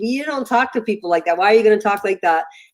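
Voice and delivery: ordinary talk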